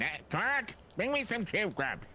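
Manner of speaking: squeaky, very high-pitched put-on character voice. Retell how she began speaking after you randomly called her Tube Grubs, in a Grand Nagus voice. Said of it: "started speaking like the Grand Nagus".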